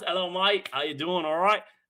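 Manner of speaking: put-on New Zealand accent. Greeting a viewer from new zealand: attempted new zealand accent. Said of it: "Not sure if that's a good accent from New Zealand".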